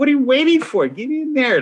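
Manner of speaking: very high, squeaky, pesky little voice. Recalling Hitch speaking to you as you took your time, do a squeaky, annoying little Hitch voice. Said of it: "I remember Hitch's squeaky little voice".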